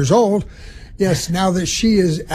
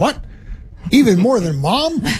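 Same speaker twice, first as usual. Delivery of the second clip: perky, surprised, pitched-up little voice; 5 semitones higher than usual. A parent retelling how a child answered, imitating someone perking up. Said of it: "she perked up and said".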